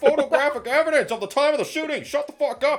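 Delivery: loud yell, bellowed from far above. Presenting a photo as evidence to another speaker, yelling. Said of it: "don't yell at me".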